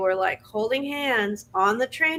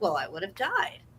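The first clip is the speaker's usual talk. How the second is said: plain, matter-of-fact, no-fuss delivery; 7 dB quieter than usual. Retelling a woman's answer to an interviewer: imitating a matter-of-fact tone. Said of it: "it was such a matter of fact".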